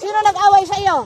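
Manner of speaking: loud, high-pitched call.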